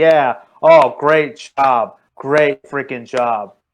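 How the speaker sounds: slow, very sarcastic delivery. Describing a wrestling entrance, voicing the wrestlers' slow-clap reaction, retelling sarcastic praise. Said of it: "very sarcastic".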